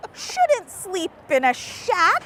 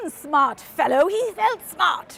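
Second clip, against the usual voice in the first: casual, playful put-on British accent; 2 semitones lower than usual. Speaker reading a phrase aloud to another person, in a British accent. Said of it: "I'm just saying it in a British accent".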